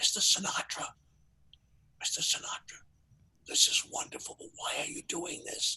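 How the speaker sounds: very quiet, breathy, barely audible whisper. Walking toward the dais, recounting a question he whispered to his host, retelling a whisper. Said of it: "I whisper".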